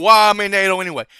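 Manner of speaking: angry, griping voice. Retelling a complaint from someone who is mad: imitating someone mad. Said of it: "Trump's mad".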